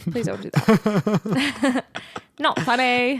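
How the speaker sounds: put-on practiced, slow, drawn-out English accent. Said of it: "practicing your English accent".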